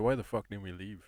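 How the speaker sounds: usual speaking voice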